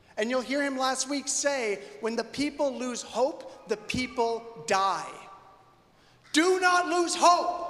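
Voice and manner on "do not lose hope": outright loud, high-pitched shouting. Speaking about a ministry called There Is Hope to the listeners, yelling. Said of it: "Sorry for yelling".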